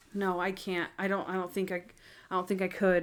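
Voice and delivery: mock-devastated, acted distraught voice. Recounting a movie scene with the captain outside, acting out being devastated. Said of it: "And she's devastated".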